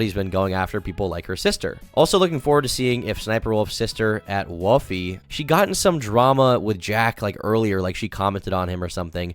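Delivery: ordinary delivery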